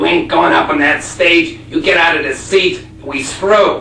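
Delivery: loud, slow, jealous voice.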